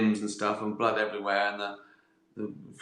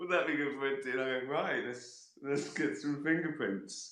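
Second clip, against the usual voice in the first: acted, half-laughing, chuckling through the words; 4 semitones higher, 8 dB quieter than usual. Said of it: "But I'm sort of chuckling".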